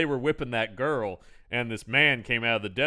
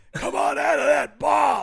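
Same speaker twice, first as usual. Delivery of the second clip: put-on very high, rough, creaky, stretched-out holler; 14 semitones higher, 4 dB louder than usual. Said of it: "Like that".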